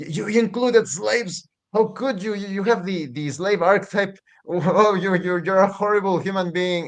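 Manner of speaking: mock indignant, accusing outrage, high-pitched. Retelling how critics attacked a game's creator: imitating an outraged accuser. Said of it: "he actually got attacked".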